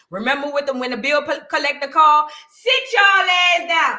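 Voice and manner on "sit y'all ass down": acted stern, bossy scolding voice, pitched up. Imitating a mother telling the kids to sit down: imitating mom scolding kids. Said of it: "our mama had the phone bill paying voice".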